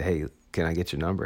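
ordinary delivery

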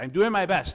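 very loud, high-pitched protesting shout. Retelling a cooking-show dream, speaker acts out shouting at a yelling chef. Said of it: "I shouted at Gordon Ramsay".

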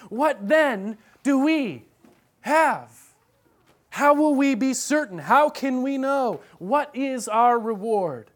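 put-on urgent, pressing tone. Voicing Peter asking on behalf of the disciples, in an urgent tone. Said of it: "i'm using kind of an urgent tone of voice here".

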